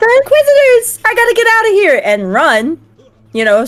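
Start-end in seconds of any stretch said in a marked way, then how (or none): 0.0-2.0 shrill, very high, loud panicked scream. Player voicing her character running away from the Inquisitors: screaming in panic. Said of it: "I run away screaming like".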